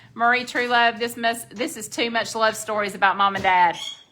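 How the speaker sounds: usual speaking voice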